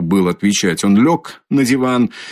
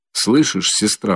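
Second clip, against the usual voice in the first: ordinary delivery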